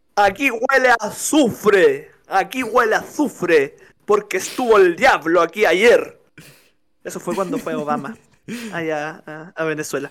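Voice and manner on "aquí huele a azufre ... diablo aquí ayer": deep, thick voice, as if a ball in the mouth. Demonstrating how to imitate Chávez after describing his voice: Hugo Chávez impression. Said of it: "Y a hablar así".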